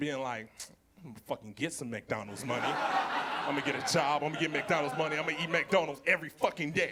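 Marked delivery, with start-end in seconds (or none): 1.0-6.9 furious, determined rant, angry and swearing. Retelling a childhood vow to earn money: imitating an angry vow. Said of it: "I remember being so angry".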